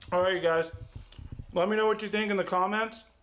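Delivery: talking with mouth full. A cooking video host wraps up, talking with mouth full. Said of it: "I have my mouth full".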